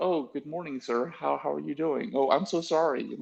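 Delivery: high, overly polite, apologetic tone. Imitating how a scowling book character talks: imitating a character's overly polite speech. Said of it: "And then when he talks, he's like".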